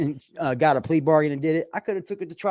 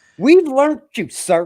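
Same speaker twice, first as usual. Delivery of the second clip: put-on high, loud, babyish little-kid voice; 9 semitones higher, 7 dB louder than usual. Mocking someone who gets scared and talks on here: imitating childlike talk. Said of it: "you start talking like a child".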